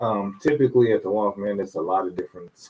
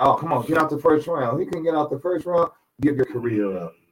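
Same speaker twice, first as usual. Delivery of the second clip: exasperated, pitched-up yelling voice; 6 semitones higher than usual. Recounting a short, hyped-up fight, retelling what he yelled: retelling a yell. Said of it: "that's why I was yelling".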